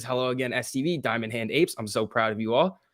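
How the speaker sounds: ordinary delivery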